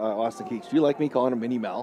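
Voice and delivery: very quiet, hushed half-whisper. Asking the other speaker about a nickname so someone nearby won't hear: half-whispering. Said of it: "I have to whisper because he's over there".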